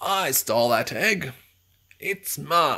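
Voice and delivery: loud shout. Narrator reads a character's line on spotting the fox, shouting. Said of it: "he shouted".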